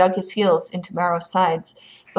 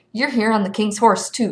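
plain reading voice

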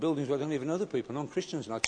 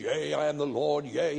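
put-on very slow, creaky, archaic old-English preacher voice. Imitating a man prophesying in church: imitating old english prophecy. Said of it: "get up in an old English and he goes".

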